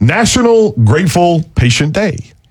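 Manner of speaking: deliberate, word-by-word speech. A radio host announces a topic that is a tongue twister, slowly and carefully. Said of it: "I have to say this slowly".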